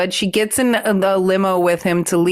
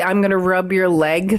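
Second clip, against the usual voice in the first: plain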